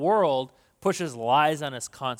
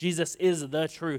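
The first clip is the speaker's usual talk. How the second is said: ordinary talk, nothing marked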